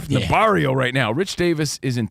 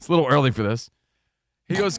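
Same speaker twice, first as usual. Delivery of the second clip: normal talking voice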